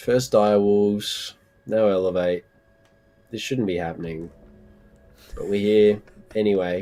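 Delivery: dejected, audibly disappointed voice. Commenting on a match that went to overtime, disappointed voice. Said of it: "The disappointment in your voice is so apparent".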